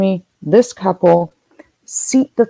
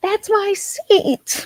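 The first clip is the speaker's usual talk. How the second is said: very high shrieking scream; 13 semitones higher, 4 dB quieter than usual. Act out somebody screaming over a seat at the half-full gate, imitating a classic Karen screaming. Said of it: "Like a classic Karen voice".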